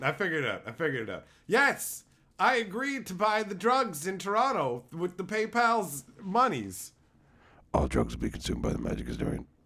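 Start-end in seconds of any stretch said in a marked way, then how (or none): 7.7-9.4 throwaway aside with voice dropped very low. Joking about a promise to buy drugs: mock under-breath aside. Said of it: "how do I do the quiet under my breath exclamation".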